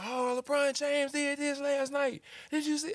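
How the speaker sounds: loud, very high, drawn-out, obnoxious gabbing. Retelling friends talking in the studio: imitating loud friends.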